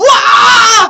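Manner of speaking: really loud, very high, excited yell.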